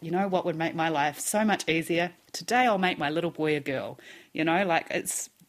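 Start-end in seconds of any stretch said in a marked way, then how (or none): none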